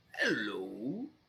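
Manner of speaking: wavering, warbly voice. Game master voices a being speaking into the players' heads; warbling voice. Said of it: "you hear a warbling voice in your head".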